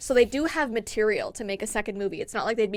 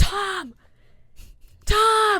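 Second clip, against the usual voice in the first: play-acted, very high, shrill, loud scream; 11 semitones higher, 5 dB louder than usual. Imagining a neighbor's hired knocker-upper at six in the morning, mock screaming. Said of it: "just screaming at, like, six in the morning".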